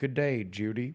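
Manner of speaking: acted anger under thin politeness, stoic, barely civil. Retelling a TV scene where a stoic, mad BJ meets Judy: BJ, stoic and mad with barely there civility. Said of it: "he just says with all the barely there civility".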